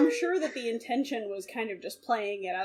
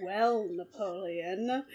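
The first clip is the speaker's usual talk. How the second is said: put-on sultry voice, lower; 4 semitones lower, 4 dB quieter than usual. Imitating Ilya calling Napoleon in the episode: sultry Ilya voice.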